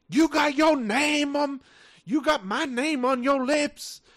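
very loud, very high, shrill, drawn-out screaming fit. Retelling how a student got in a girl's face: imitating a student screaming. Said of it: "starts screaming".

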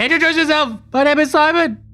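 shouted at very high pitch. Calling out to a stranger as a character: yelling out. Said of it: "I might yell out".

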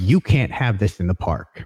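snide, sneering put-down tone. Retelling a park visit, the speaker quotes a guest relations worker, mock-snide. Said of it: "I just said that snidely".

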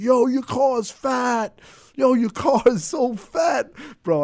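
very loud, slow, high, drawn-out yell. Retelling a guy yelling from a car window: imitating a guy yelling. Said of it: "he's yelling out the window".

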